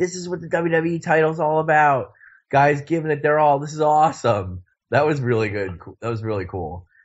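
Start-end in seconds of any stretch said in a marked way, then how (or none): 0.0-4.6 thrilled, all-in, excited, pitched-up enthusiasm. Retelling Seth Rollins talking on the mic: imitating excited Seth Rollins. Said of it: "he got so excited".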